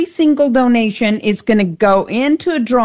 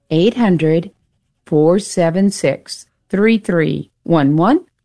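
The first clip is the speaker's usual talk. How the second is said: slowly, much lower pitch; 6 semitones lower than usual. Repeating a phone number for Dave: said slowly. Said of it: "I'm going to say it slow".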